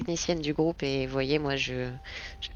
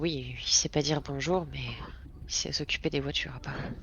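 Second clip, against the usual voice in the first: hushed, half-whispered aside; 3 dB quieter than usual. In a roleplay scene, the player's character makes an aside, half-whispering. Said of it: "je chuchote".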